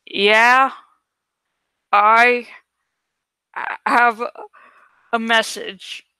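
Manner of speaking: distorted, unrecognizable, thick, twisted, halting disguised voice. Narrator calls a man who picks up, disguising the voice: thick, twisted voice. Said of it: "I said in a thick, twisted voice that did not sound at all like me".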